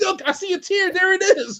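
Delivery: very high-pitched, teasing, ribbing voice. Retelling the son's teasing of a stone-faced man: imitating son teasing. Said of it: "my son was like".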